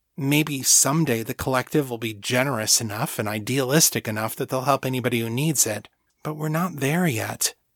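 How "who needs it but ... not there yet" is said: ordinary delivery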